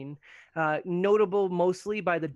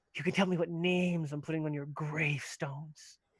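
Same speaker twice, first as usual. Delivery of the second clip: soft, sibilant, hissing goblin voice; 6 dB quieter than usual. The narrator voices a goblin woman baring her teeth at the group: hissing goblin voice. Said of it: "she hisses".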